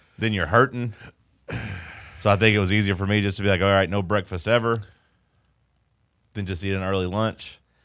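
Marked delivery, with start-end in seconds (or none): none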